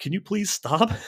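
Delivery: very high, shrill yelling. Retelling what was yelled at the TV during the game, retelling yelling at the TV. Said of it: "I'm yelling at the TV like".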